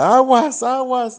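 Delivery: acted, shrill, very high, loud shouted yell. Retelling warning a distracted man about an oncoming trolleybus: imitating own past yelling. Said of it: "yo le gritaba".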